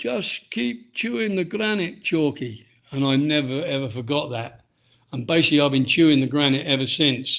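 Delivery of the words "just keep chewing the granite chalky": put-on Scottish accent, pitched higher. Retelling his trainer speaking to him after a fall, in Jimmy Smith's Scottish accent. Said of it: "in his Scottish accent".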